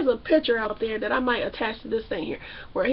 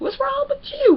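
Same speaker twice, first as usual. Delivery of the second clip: high, loud, squealing incredulous disbelief. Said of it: "And she's like".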